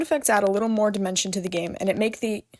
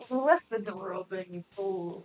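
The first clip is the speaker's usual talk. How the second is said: put-on husky old pirate voice; 2 semitones lower, 7 dB quieter than usual. Telling the other player they left the door open: sounding like a pirate. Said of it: "You sounded like a pirate".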